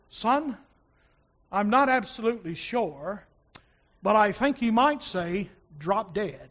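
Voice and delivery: put-on English accent. Quoting what Dr. Phillips answered when asked, in John Phillips's English accent. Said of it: "who had this English brogue".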